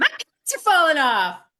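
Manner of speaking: broad, very big Southern drawl at full volume. Retelling a group member's win of the week, in Connie's big Southern drawl. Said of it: "She's got a very big Southern drawl".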